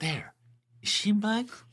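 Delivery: high-pitched, hushed half-whisper. Retelling a scene where a man points someone out: imitating a half-whisper. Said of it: "you just hear him whisper".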